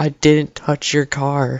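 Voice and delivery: quiet, soft voice spoken slowly. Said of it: "I'm like, in my head".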